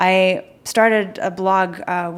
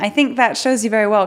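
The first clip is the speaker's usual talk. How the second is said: ordinary talk, nothing marked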